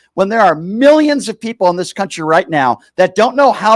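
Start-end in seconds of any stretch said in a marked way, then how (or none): none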